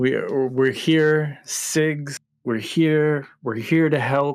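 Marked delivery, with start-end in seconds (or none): 1.4-4.4 shouting, yelling out loud. Playing a character calling out to cigs at a door: in-character yelling. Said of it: "I start yelling that".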